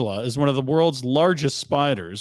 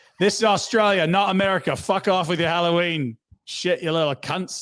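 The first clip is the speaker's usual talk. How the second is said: crude Australian bloke voice; 4 semitones higher than usual. Reading a rude Halloween door sign aloud: Aussie Brad voice. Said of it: "Aussie Brad reads it".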